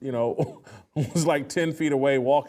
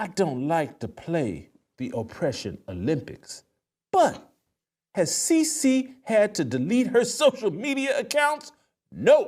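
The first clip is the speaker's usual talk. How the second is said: animated put-on voice with big swooping pitch; 6 semitones higher than usual. Reading a deleted tweet aloud in a Jemele Hill voice. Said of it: "I'll do my best, uh, voice here".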